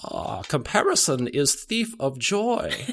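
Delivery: put-on high, sing-song, intoning wise old-sage voice. Asked to say the saying aloud on the spot, Yoda voice. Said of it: "better if you say it in Yoda's voice".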